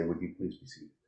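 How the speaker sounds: very hushed, quiet, peaceful voice. Advising how to handle an angry person, demonstrating the line: very peaceful voice. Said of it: "in a very peaceful voice".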